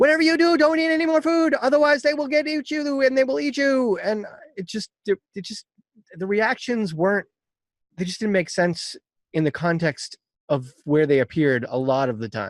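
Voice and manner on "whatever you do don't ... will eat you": mock very high, shrill, frantic-sounding yell. Retelling how Chihiro yells at her parents: imitating Chihiro yelling. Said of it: "she was yelling at them, like".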